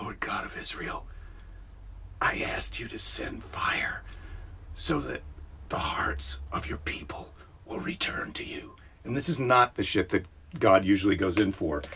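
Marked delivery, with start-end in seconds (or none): 0.0-8.7 very quiet, breathy whispered appeal. Retelling Elijah praying to God for fire: imitating quiet speech. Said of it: "Elijah speaks quietly to God".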